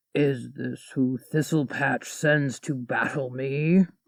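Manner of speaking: soft, rumbling monster voice. Narrator voicing the dragon questioning Agnes, rumbling dragon voice. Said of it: "The dragon's voice rumbled in Agnes's bones".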